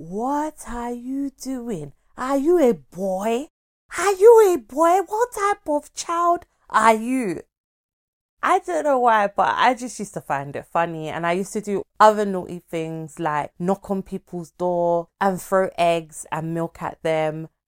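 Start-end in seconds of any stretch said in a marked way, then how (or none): 0.0-7.4 very high-pitched, shrill, loud shrieking. Recalling being caught sneaking out as a child, imitating the mother screaming. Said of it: "she screamed and shouted".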